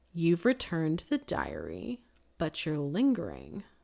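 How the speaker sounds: speaking low, soft and hushed. Narrator reading Laura questioning Hugo across a table, in a low voice. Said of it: "she said in a low voice".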